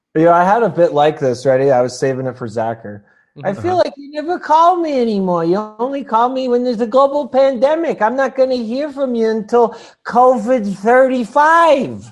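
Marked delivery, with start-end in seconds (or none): 3.5-11.9 very high-pitched nagging voice. Joking with a friend who never visits anymore, in Adam Sandler's mother voice. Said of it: "What was that accent you were doing there?".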